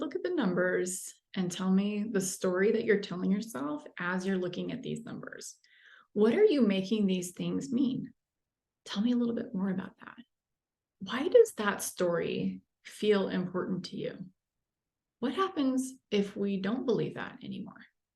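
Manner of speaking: open, earnest, non-critical curiosity. Demonstrating the tone of voice listeners should adopt, in a seriously curious tone. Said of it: "the other one is just full of serious curious".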